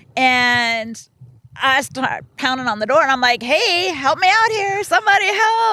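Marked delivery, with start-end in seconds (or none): 3.4-5.7 put-on high-pitched screaming. Retelling being stuck behind a door, pounding on it: imitating own screaming. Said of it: "Are you screaming at this point?".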